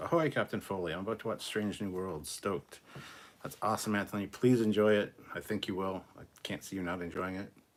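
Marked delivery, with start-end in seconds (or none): none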